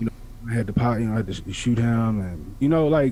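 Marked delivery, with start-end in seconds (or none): 0.0-2.2 put-on flat nonchalant monotone, lower. Imitating a kid on trial telling his story: put-on nonchalant monotone. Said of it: "real nonchalant".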